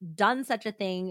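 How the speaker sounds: plain reading voice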